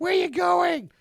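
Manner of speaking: very high, loud, shrill nagging woman voice. Acting out a wife answering a husband on moon guard duty: Marge Simpson nagging woman voice. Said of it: "that's my Nagy woman voice".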